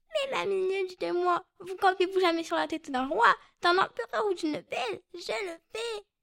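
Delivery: high, teasing, mocking insect voice. Interviewed actor performs the fly's lines addressing the ant: fly mocking the ant. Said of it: "quand la mouche s'adresse à la fourmi en se moquant d'elle".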